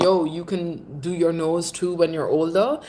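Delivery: ordinary talk, nothing marked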